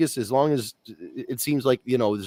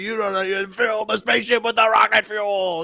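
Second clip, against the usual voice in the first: mad, garbled, furious yelling like a promo; 9 semitones higher than usual. Joking about being unintelligible when yelling mad: yelling Ultimate Warrior impression. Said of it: "I sound like the Ultimate Warrior".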